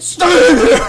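imitated screaming. Retelling her dad screaming on the phone with the ambulance, retelling a scream. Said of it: "He's screaming like".

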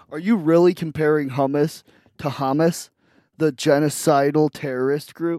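ordinary delivery

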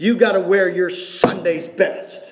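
put-on angry tone. Quoting an elder who was mad at the speaker, retelling an angry elder. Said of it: "he was really mad at me".

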